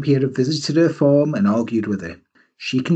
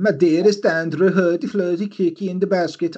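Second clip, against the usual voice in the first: put-on Swedish accent with nonsense words; 5 semitones higher than usual. Reading out a woman's letter to andrew: mock swedish accent. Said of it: "I know that Swedish".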